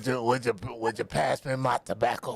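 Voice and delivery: put-on raspy, rough, cranky old-man voice. Speaker acting out a cat that sounded like an old smoker, in a put-on raspy cranky old-man voice. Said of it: "like this raspy ass voice".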